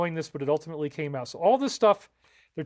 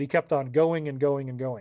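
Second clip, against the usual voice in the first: ordinary delivery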